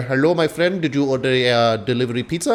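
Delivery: joking, fake, put-on Indian accent. Comedian retells answering a door with an empty pizza box, in put-on indian accent. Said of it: "I have every right to do an Indian accent".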